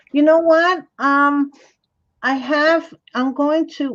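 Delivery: high, half-yelled outdoor voice. Answering a viewer who wanted to see the finished project: yelling. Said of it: "why am I yelling?".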